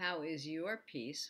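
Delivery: normal talking voice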